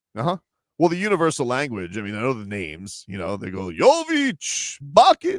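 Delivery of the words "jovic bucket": very high, loud, swooping voice, drawn out. Imitating how they call the game in Serbian: Count Dracula voice. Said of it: "why did you sound like Count Dracula?".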